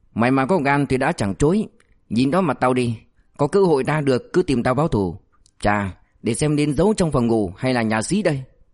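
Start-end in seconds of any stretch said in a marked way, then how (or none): none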